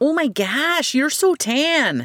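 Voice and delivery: put-on high, drawn-out Midwestern accent. Retelling what a lady at a public pool said to the speaker: lady's Midwestern voice. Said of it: "saying in her Midwestern voice".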